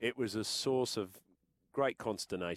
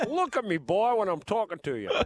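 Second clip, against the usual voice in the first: booming, swooping rooster voice, swinging high and loud; 11 semitones higher, 8 dB louder than usual. Naming favourite TV characters, then quoting one: Foghorn Leghorn voice. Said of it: "Foghorn Leghorn".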